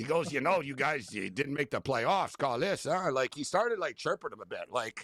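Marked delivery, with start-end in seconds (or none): 0.3-3.1 put-on, imitated French accent. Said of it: "my buddy had a French accent".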